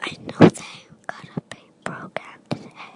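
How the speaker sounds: breathy whisper, speeding up. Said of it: "No, I can't hear you".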